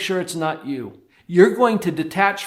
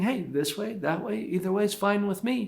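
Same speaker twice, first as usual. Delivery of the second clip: easy, light, lilting voice; 3 semitones higher, 8 dB quieter than usual. Advising parents how to speak to their child, light lilting voice. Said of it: "have a little lilt to your voice".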